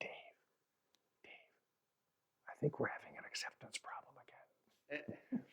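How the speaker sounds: very quiet whisper, close to the ear. Retelling what someone whispers in the speaker's ear after a shoulder tap, retelling a whisper in the ear. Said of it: "he whispers in my ear".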